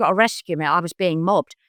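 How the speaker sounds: ordinary delivery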